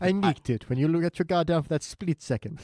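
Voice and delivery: put-on British accent. Quoting the guy who steals the sugar: quoting in a British voice. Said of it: "That very specific British voice".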